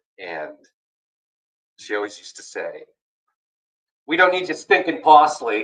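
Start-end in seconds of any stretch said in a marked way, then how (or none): 4.1-5.7 mock grandmotherly Long Island accent, higher and louder. Retelling what a grandmother always used to say: Long Island accent. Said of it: "She had that long, that Long Island".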